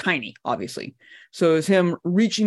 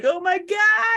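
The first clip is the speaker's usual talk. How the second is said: shrill, very high shriek. Describing a soldier caught in a nuclear explosion; retelling a scream. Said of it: "He's screaming like".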